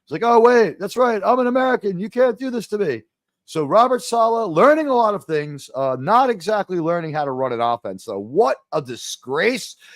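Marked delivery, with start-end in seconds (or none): 0.2-3.0 outraged, indignant, acted-out shouted yell. Retelling a coach's words after his arrest: imitating someone yelling. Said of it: "that's what he's been yelling".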